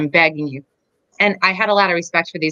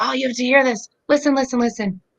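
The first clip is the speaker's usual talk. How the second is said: mock high, raised, calling-out yell; 7 semitones higher than usual. Retelling calling out while reading and studying: imitating own past yelling. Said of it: "I'm yelling to Dan".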